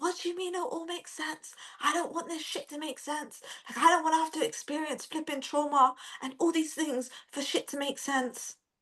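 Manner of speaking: play-acted, high, furious, raging shout. Retelling shouting at God alone in the living room: retelling her own angry shout. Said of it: "I was literally shouting".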